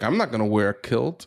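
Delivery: normal talking voice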